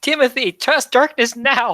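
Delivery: high, loud shout. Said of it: "I shout".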